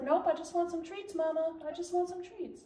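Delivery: plain talking in a dog voice. Speaking for the dog, who only wants treats: voicing the dog. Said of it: "He's like".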